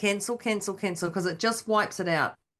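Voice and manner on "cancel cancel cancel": normal talking voice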